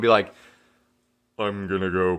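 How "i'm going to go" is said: very low, deep, level, flat monotone drone. Quoting a woman who talked in a low monotone, low flat monotone. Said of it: "talk in this like monotone".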